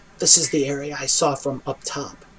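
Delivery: soft, hushed, secretive half-whisper. Narrator voices Princess Calliope half-whispering in the listener's ear, half-whispering. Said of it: "whispers in your ear".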